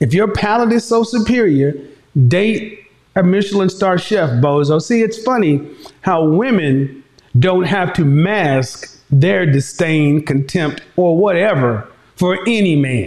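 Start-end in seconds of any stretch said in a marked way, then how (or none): none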